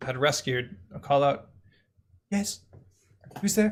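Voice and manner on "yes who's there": gentle, soft, high-pitched woman's voice. Narrating a game, voicing the rescued woman answering a knock, soft woman's voice. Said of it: "you hear the soft voice of the the woman".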